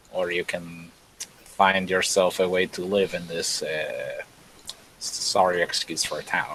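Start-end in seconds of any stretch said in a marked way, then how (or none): 5.0-6.6 muttered under breath, much lower and quieter. During a tabletop role-play, a player speaks in character, muttered under breath. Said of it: "I say under my breath".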